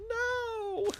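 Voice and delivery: very high-pitched, shrill, drawn-out yelled "no". Telling how someone banged on the door, the speaker re-enacts yelling no. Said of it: "I'm like yelling no".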